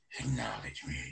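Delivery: deep, low, breathy half-whisper. Imitating Roman Reigns saying his line: deep Roman Reigns voice. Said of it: "with his deep-ass voice".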